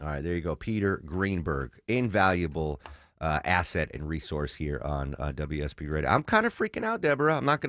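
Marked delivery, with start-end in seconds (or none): 6.1-7.4 nervous voice cracking into a very high squeak. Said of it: "you hear my voice crack?".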